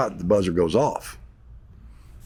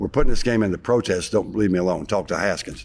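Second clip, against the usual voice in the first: ordinary talk, nothing marked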